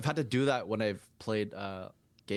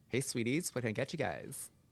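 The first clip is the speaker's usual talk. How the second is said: flamboyant, camp put-on voice; 3 semitones higher, 3 dB quieter than usual.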